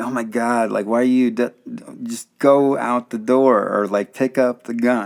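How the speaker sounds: slow, drawn-out hollering yell. Retelling watching a horror movie in a theater: imitating yelling at the screen. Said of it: "yelling at the screen".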